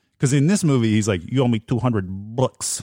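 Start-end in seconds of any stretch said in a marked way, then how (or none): 1.3-2.8 bad, exaggerated, over-the-top cartoonish Brooklyn accent. Mocking how an actor talks in a movie, bad over-the-top brooklyn accent. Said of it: "he has to do a like a Brooklyn accent".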